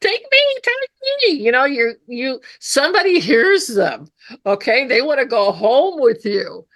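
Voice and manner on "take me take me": very high, squeaky falsetto voices. Voicing the rocks that want to go home: high falsetto rock voices. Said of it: "they have high falsetto voices".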